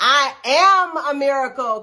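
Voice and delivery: loud, high-pitched delivery. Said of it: "So say".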